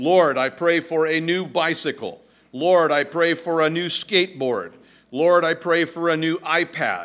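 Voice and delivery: loud, booming, play-acted yell at top of lungs. Telling a joke, the speaker acts out a young boy praying at the top of his lungs. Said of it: "began to pray at the top of his lungs".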